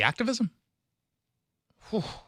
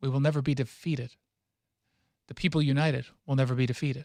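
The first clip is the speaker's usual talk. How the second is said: plain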